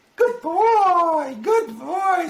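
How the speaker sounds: very high, slow, drawn-out doting voice. Demonstrating dog training, praising the dog Max, in a high-pitched praise voice. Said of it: "High pitch you praise".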